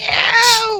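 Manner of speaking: very high, loud, shrieking goblin creature scream. Voicing a goblin that suddenly screams: goblin screaming. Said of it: "instantly kinda begins to scream".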